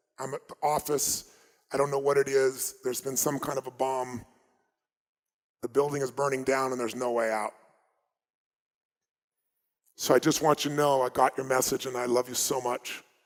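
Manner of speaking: usual speaking voice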